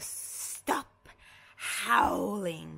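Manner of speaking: hissing voice. Reading a picture book aloud, the snake wakes up: hissing. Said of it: "hisses the snake".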